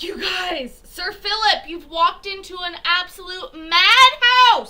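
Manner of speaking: shrill, very high, very loud yelling. Addressing the group and a newcomer amid the chaos: yelling. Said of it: "I'm yelling now".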